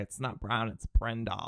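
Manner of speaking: slow, mocking put-on girl voice.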